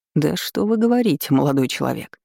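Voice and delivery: ordinary delivery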